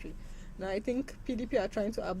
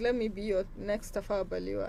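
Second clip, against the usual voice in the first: ordinary delivery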